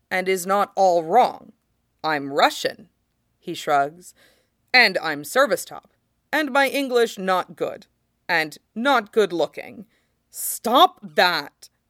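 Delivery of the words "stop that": angry, fuming, furious tone. Narrator reads Sid answering Gino's self-criticism: furious. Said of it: "Sid says, furious".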